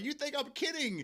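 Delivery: put-on Scottish woman's accent. Retelling what a Scottish woman said to Bubba while playing, imitating a Scottish woman's accent. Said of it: "she said in her accent".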